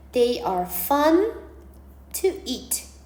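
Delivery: very slow, word-by-word reading aloud.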